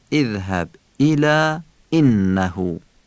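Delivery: slow, glottal stops punched on idh-hab, ila, innahu. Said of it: "نبر انه ادا بشه".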